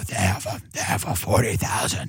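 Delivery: hushed, whispery, deep, breathy broadcast voice.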